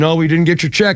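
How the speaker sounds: ordinary talk, nothing marked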